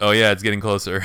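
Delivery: ordinary talk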